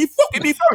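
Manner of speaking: high-pitched, indignant tone. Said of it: "I said".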